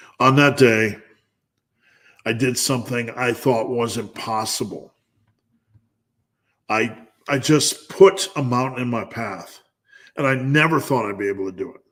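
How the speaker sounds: fighting back tears. Recalling a long run they managed to finish, the speaker speaks while holding back tears. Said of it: "try not to cry".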